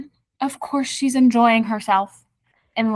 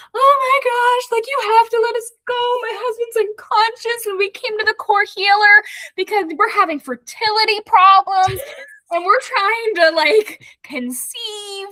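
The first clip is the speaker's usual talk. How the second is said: put-on, very high, tearful, hysterical sobbing, begging tone; 11 semitones higher than usual. Retelling how a woman pleaded with a guard to let them go, imitating hysterical crying. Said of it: "she's like crying hysterically".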